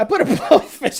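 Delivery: talking through laughter. Reading a viewer's message aloud: laughing while talking. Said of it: "I can't even talk".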